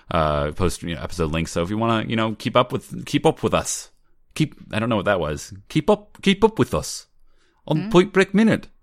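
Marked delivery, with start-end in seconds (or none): 5.6-8.6 high-pitched, fake, heavy Liverpool accent. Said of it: "I'm kind of a beetle now".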